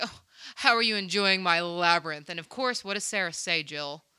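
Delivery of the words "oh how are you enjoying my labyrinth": put-on pompous villain voice, louder. Retelling a scene where Jareth greets Sarah: pompous Jareth voice. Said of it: "pompous, and he's like".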